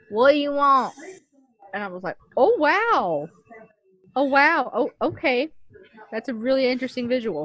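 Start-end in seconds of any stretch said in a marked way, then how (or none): 0.1-0.9 big, thick Texan twang, laid on heavy. Retelling how a narrator voiced a character, big Texas twang. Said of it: "it was a big twang".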